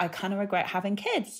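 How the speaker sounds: soft, very quiet, hushed private tone. Imitating mothers who admit regretting having kids: imitating someone speaking very quietly. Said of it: "they say it very quietly".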